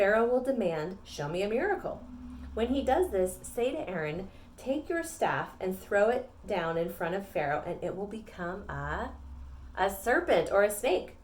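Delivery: normal talking voice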